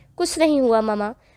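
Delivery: sharp, curt, bitter, tart tone. A daughter answers her mother, who asks what happened, in a sharp, bitter tone. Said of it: "वो तल्ख हुई।".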